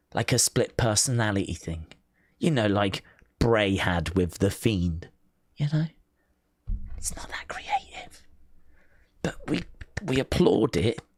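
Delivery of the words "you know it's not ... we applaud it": hushed whisper under the breath. Speaker commenting on a storyline, not wanting its makers to hear: whispering. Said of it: "I'm whispering because".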